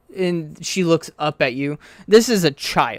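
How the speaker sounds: plain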